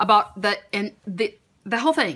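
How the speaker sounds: stuttering, tripping over words. Describing a bundle that was bought, stuttering over the words. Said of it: "I'm stuttering".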